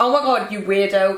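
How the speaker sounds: normal talking voice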